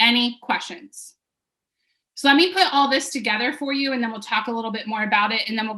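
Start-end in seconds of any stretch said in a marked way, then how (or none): 0.0-1.1 pitch falling at the end of phrases. Right after explaining the paperwork, asking for questions with falling pitch on questions. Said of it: "any questions with a downswing".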